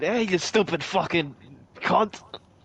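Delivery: sudden switch to slow put-on British accent. Speaker mocks another man who just sounded british, in a put-on british accent.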